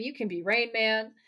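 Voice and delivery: ordinary delivery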